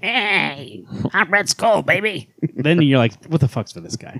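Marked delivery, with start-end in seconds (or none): 0.0-2.3 high, slow drawl stretching out the hey. Imagining a villain with a different voice, doing a Skeletor voice. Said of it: "he talked like Skeletor does".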